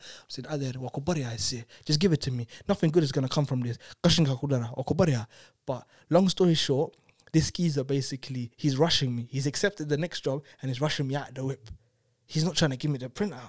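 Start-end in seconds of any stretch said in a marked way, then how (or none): 0.5-5.3 desperate, begging, imploring plea. Retelling begging a driver for the printout: retelling a plea. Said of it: "pleading with him".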